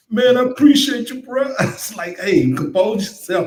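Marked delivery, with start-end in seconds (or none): 0.1-1.5 put-on cracking voice, much higher. Retelling a friend thanking him, imitating the friend's cracking voice. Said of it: "His voice all cracking".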